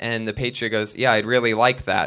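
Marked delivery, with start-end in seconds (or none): 1.0-2.1 put-on, mock-condescending reply. Retelling how the patriot answered the driver's offer, imitating a condescending reply. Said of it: "sounded condescending".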